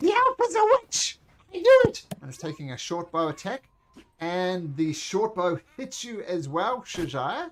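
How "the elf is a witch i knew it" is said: put-on goblin voice. Voicing a goblin accusing an elf of being a witch: goblin voice. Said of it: "this goblin is gonna say".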